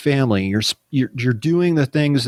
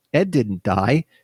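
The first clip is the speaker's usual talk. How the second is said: normal talking voice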